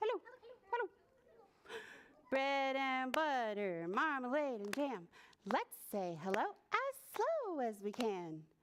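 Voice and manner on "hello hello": very fast, high-pitched, rattled off. Leading a group in a hello game, saying hello as fast as possible, very fast. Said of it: "Say it really fast".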